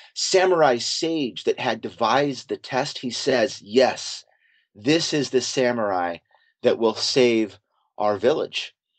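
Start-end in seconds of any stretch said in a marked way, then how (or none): none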